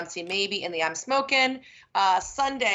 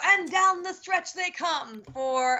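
pitched-up, fast horse race announcer call; 9 semitones higher than usual. Asked what's next at Del Mar, imitating the race call: race-caller impression. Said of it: "I don't think that was your best impression".

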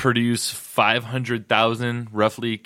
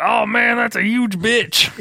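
put-on very high older-gentleman voice; 11 semitones higher, 5 dB louder than usual. Imagining aloud how an older gentleman would react: older bourbon-drinker impression. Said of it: "is that your impression of what a bourbon drinker sounds like".

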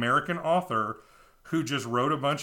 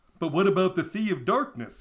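goofy, pitched-up cartoon moose voice; 5 semitones higher than usual. Reading a story aloud, the narrator voices the seagull's question: Bullwinkle accent. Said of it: "I'm just basically doing a Bullwinkle accent".

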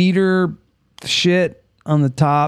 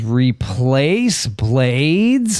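tone with words drawn out; 3 semitones lower than usual. Reading out a comment from the chat: Friday Kind of Guy's tone. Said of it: "I'm trying to do it in, in his tone".

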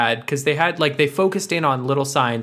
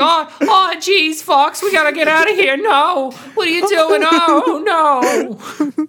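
put-on nervous whiny cartoon voice, higher and louder; 6 dB louder than usual. Mocking an actor's film performance, imitating James McAvoy sounding like Morty. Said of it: "James McAvoy sounds like Morty".

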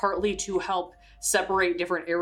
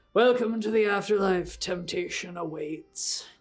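slow, raspy, ceremonial intoning. The storyteller voices the ferryman as the boat reaches the dock, deep, raspy voice. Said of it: "intones in a deep, raspy voice".

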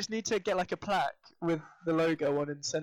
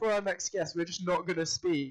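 ordinary talk, nothing marked

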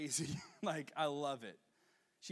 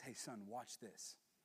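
very quiet, slow, drawn-out hushed whisper; 4 semitones lower, 11 dB quieter than usual. Retelling a father at a playground speaking to his son: imitating a whisper. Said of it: "I hear the father whisper".

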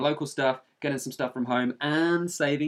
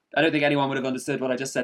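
ordinary delivery

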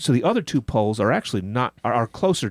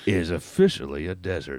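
low, deep, bad documentary narrator voice attempt; 6 semitones lower, 3 dB quieter than usual. Asked by the other speaker to do the segment as an impersonation, attempted low Morgan Freeman impression. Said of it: "Can you do this segment with a Morgan Freeman accent or impersonation?".

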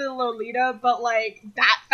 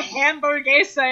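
hamburguesa said in a put-on American accent. Imitating someone ordering food in Spanish: American accent. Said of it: "in an American accent".

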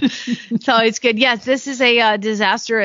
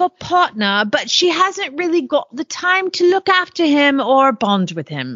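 bad, terrible put-on English accent; 4 semitones higher than usual. Reading out a horse-for-sale listing in a terrible English accent. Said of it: "I'm a terrible English accent".

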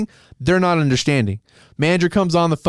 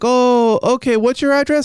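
put-on very heavy, laid-on-thick Indian accent, pitched up; 7 semitones higher than usual. Retelling a phone call with a customer service agent, imitating a thick Indian accent. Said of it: "the thickest Indian accent you've ever heard".

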